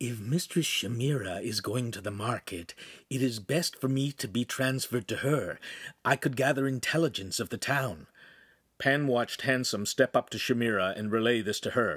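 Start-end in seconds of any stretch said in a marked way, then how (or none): 0.0-8.0 quiet, confidential AI-voice half-whisper. Narrator reading an AI speaking to Handsome, half-whispered. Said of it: "the AI whispered to Handsome".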